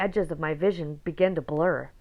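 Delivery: ordinary delivery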